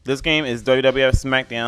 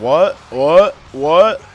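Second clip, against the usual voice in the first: loud, forceful yell of 'what'. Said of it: "like, yelling at people".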